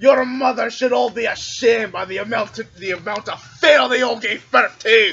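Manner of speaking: yelled, taunting. In a tabletop role-play game, a player's character taunts the other ship: shouted taunt. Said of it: "I'm gonna shout at the other ship".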